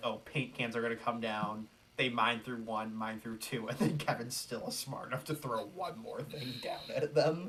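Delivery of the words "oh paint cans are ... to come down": ordinary talk, nothing marked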